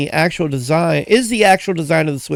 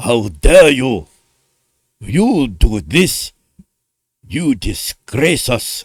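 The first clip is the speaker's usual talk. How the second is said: slow, low, drawn-out, bad put-on Japanese accent. Speaker voices Nintendo scolding him: mock-angry Nintendo, Japanese accent. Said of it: "My accent is it's not great".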